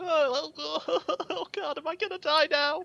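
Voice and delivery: very high, wretched sobbing wail. Recounting his reaction after drinking from the vial, imitating wretched sobbing. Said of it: "sobbing wretchedly".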